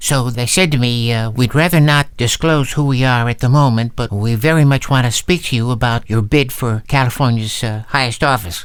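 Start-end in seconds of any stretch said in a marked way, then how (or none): none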